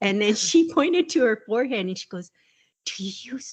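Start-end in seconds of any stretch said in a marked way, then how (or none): 2.8-3.5 whispering, much softer. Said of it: "she's whispering".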